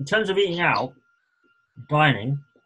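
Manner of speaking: talking while chewing, through a mouthful. Podcaster talks about american food while eating, talking while chewing. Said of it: "it's pretty bad podcasting when I'm chewing while I'm talking".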